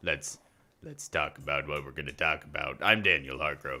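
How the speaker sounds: put-on frog voice. Host opening the show and introducing himself: froggy voice. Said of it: "using the froggy voice".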